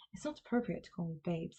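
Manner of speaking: fast, mock completely earnest, dead-serious delivery. Quoting a remark someone made to the speaker: mock-serious delivery. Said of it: "just so seriously".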